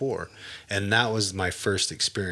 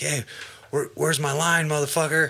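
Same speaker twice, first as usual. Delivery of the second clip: put-on excited voice, much higher pitch, much faster; 8 semitones higher, 4 dB louder than usual. Recalling a friend coming home from work, imitating an excited friend. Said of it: "And he came in real excited".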